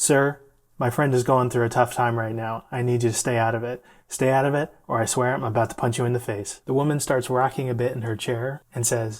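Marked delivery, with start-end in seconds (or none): none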